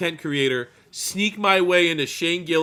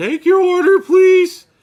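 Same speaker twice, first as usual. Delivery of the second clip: put-on very high, very loud, shrill young teen cashier voice; 13 semitones higher, 10 dB louder than usual. Joking that a strained voice sounds like a young fast-food worker: imitating a young teen fast-food worker. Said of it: "sound like a thirteen-year-old working".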